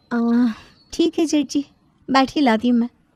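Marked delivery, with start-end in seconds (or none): none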